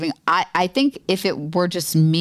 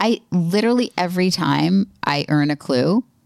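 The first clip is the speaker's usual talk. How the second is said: plain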